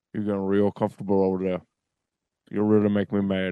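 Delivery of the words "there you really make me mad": normal talking voice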